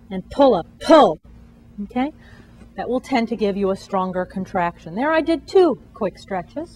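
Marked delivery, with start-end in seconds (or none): 0.1-1.2 slightly raised, a little louder voice. Getting a patient to pull, with the command in a louder voice. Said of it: "I want to talk uh, in a little bit louder uh, voice as I get her to pull".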